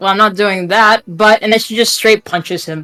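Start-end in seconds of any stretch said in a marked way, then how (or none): 0.0-1.0 cool, unimpressed, dismissive tone. Voicing a character who refuses to do something: unimpressed character. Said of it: "she's not impressed".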